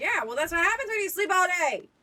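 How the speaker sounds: yelling. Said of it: "I'm just yelling at fucking Martin".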